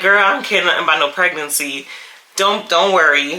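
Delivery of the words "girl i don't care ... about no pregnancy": usual speaking voice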